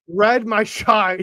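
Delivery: mock slow, loud, slurred Scottish accent.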